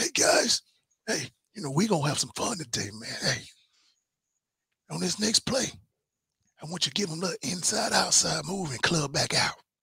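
raspy talking voice, rasp through every word. Retell how he came into the room and addressed the guys, in Rich's kind of raspy voice. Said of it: "he had this kind of raspy voice".

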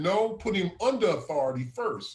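usual speaking voice

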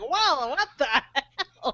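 very slow, drawn-out comic delivery, every word stretched. Recalling a big file size, imitating Will Ferrell's Harry Caray voice. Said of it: "my mind immediately went to Will Ferrell's Harry Carey".

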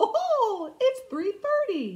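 very high, swooping, sing-song cartoon mouse voice. Recounting a dream, the speaker voices the captain's reply in a Mickey Mouse voice. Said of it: "In a Mickey Mouse voice".

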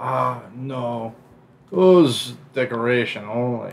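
very slow, off-target, bad character voice. Imitating a game character's line: bad imitation of his voice. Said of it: "I didn't do his voice right at all".

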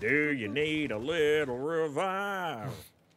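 put-on said with a twangy accent. Repeating that guy's line about a revive, in a twangy accent. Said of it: "you gotta say it with the twang".

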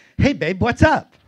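put-on perky, bubbly, high, loud, overly exuberant voice. Retelling a girlfriend's phone call: imitating a perky voice. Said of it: "erupted with a perky voice".

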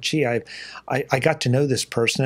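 usual speaking voice

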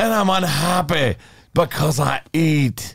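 put-on Scottish accent.

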